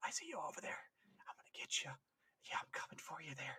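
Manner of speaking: eerie, creepy, hushed whisper. Retelling what is heard over the vox: imitating a creepy whisper. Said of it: "Why is he whispering".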